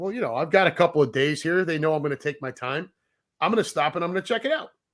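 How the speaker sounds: ordinary delivery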